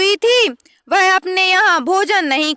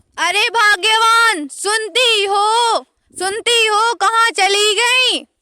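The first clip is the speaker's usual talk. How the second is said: calling out with urgency; 2 semitones higher than usual. A husband calls out for his wife, yelling loudly. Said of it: "क्यों इतना गला फाड़ फाड़ कर चिल्ला रहे हो?".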